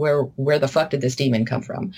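plain

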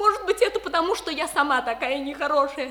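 tearful, crying while speaking. In a stage drama scene, a character speaks to another, crying. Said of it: "Перестань плакать".

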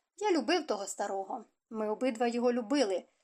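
ordinary delivery

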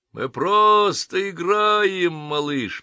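shrill, high-pitched mocking voice through laughter. Narrator reading lads mimicking the man they knocked down, mocking and laughing. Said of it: "передразнивая его, захохотали ребята".

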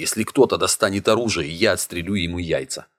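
ordinary delivery

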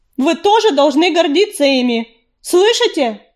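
clear, ringing, proud call-out. The stray cat addresses the whole river clan, calling out ringingly. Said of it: "звонко крикнула".

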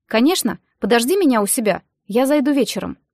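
ordinary delivery, nothing marked

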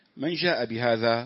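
ordinary talk, nothing marked

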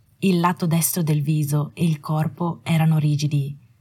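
ordinary delivery

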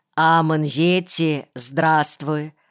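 ordinary talk

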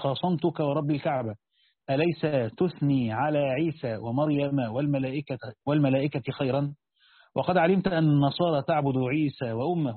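plain

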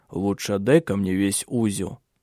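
plain

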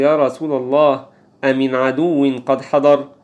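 ordinary talk

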